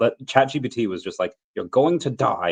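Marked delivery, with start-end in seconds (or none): 1.5-2.5 put-on slow British-accented speech. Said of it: "I don't know why I became British there".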